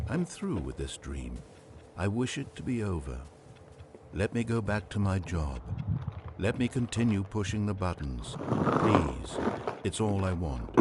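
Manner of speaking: ordinary talk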